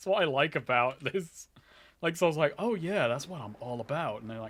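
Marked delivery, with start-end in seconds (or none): 2.6-4.2 cocky, swaggering, boastful tone. Retelling how a game character talks to everyone: imitating cocky Saul. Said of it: "acts like such a cocky prick".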